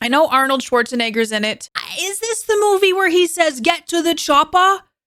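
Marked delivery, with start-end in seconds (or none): 3.6-4.8 attempted accent that drifts into a British accent. Asking about a movie, quoting its famous line in a British-sounding Arnold Schwarzenegger impression. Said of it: "Why is he British when I do it?".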